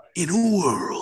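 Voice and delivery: movie-trailer announcer voice. Wishing for that talent, trying out a movie trailer voice. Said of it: "that kind of movie trailer style voice".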